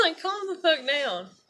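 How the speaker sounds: burst of exasperation.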